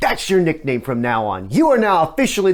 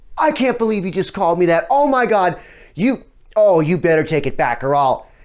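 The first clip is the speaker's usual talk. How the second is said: indignant, flustered freak-out with words tumbling out. Retelling a girl's reaction to a teasing nickname: imitating someone flipping out. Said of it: "She starts flipping out saying".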